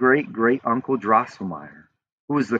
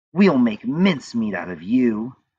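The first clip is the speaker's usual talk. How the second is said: menacing, hissed delivery. Narrator reads the Mouse Queen threatening young Drosselmeyer, hissing. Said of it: "she hissed".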